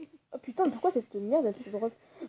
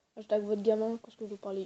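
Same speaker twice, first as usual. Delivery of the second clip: normal talking voice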